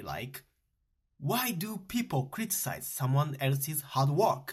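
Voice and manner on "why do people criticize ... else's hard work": plain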